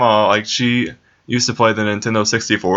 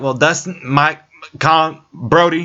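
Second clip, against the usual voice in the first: high, slow, angry stammering voice; 6 semitones higher than usual. Retelling a great grandma fumbling through names: imitating an angry great grandma stuttering. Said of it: "whenever she was getting mad at me, she'd just, like, stutter and say names".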